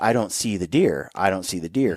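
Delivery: soft, hushed half-whisper under the breath. Retelling how the cameraman searched frantically for the deer: imitating someone half-whispering. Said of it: "he whispers".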